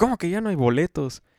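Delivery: high, half-joking, prankish play-acted shout. Retelling a prank at the cinema, shouting as you walk past. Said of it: "digo y grité".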